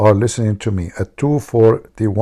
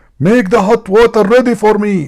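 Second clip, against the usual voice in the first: very high, shrill, loud screaming shout; 11 semitones higher, 7 dB louder than usual. Retelling a husband ordering his wife from the door: imitating a scream. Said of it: "he screamed".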